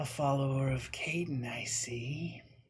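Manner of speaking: soft, silky, honeyed sweet voice. Storyteller voicing an elegant woman who turns to look at a follower of Caden, silkily sweet voice. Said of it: "her voice ... is silkily sweet".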